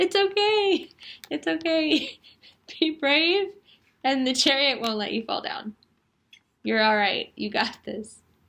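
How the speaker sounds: speech broken by laughter. Giving a reading about the chariot, laughing while talking. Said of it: "I'm sorry I'm laughing so much".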